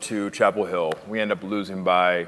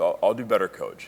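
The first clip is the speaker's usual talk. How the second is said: ordinary delivery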